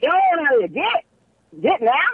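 put-on very high, swooping, old-time great-grandmother voice. Shooing something away, sounding like a great-grandmother. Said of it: "I sound like my great-grandmother just now".

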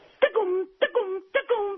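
announcer patter, pitched way up high. Guest giving a political scorecard sums up the Republicans: Arcade King voice impression. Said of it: "let me put on my Arcade King voice impression here".

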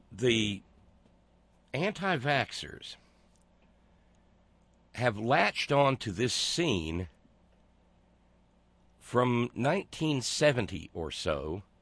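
slow, drawn-out, word-by-word, trudging delivery.

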